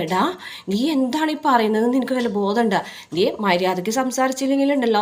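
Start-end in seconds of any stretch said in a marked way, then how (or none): none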